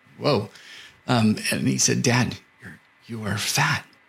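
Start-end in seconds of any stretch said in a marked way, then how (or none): 2.0-3.9 put-on voice of a young boy. Father retells his son pulling him aside for a talk: 11-year-old boy voice. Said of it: "He's 11-year-old voice".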